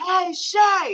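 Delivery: calling out, high and carrying. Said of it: "and his voice carries".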